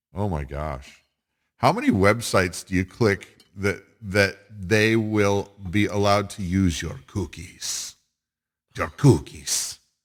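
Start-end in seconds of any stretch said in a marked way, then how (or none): 8.7-9.7 grand, dramatic matador-style proclamation with flourish. Complaining about websites asking to use your cookies: bullfighter-style delivery. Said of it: "I sound like a bullfighter when I say cookies".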